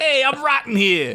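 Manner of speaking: put-on very high New York accent, zombie voice. Performers riff on a zombie from new york, in a new york accent. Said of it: "So you're a fucking zombie from New York".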